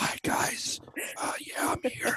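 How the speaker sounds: whispered, hushed, barely under the breath. Retelling how Stu first came on the show, imitating Stu whispering.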